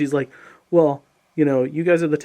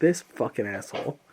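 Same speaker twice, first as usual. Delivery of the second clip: fed-up, angry swearing tone; 3 semitones lower, 5 dB quieter than usual. Retelling own reaction to being left in the kitchen: retelling own past anger. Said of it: "I was so mad at you".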